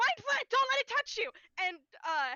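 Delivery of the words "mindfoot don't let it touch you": very high-pitched, frantic, fast, panicked yell. Player voicing their character warning an ally; panicked shout. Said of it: "very panicked. He said that as fast as I did".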